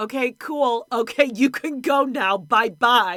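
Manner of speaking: mock, very loud, fed-up, pissed-off dismissive tone. Retelling a woman sending a man away: imitating someone pissed off. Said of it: "She's so pissed".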